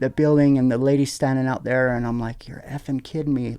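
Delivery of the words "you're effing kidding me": quiet muttered speech. Retelling storming out to the driver who hit the car: imitating own muttered remark. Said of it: "like that. I didn't say it loud".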